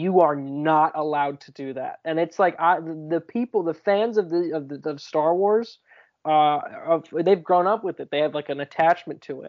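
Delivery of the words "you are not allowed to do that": put-on dead-serious voice. Speaker retells a man's answer to a joking question, imitating someone deadly serious. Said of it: "like deadly serious went".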